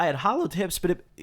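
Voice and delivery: breaking voice, cracking mid-phrase. Speaking to an audience, speaker's voice breaks mid-sentence: voice cracking. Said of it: "pardon my voice crack".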